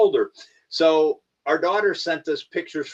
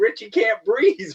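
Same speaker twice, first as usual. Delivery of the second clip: put-on laughing voice, pitched higher; 6 semitones higher, 3 dB louder than usual. Retelling how Robbie's wife reacted on the tape: imitating Erin laughing while talking. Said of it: "and she's laughing".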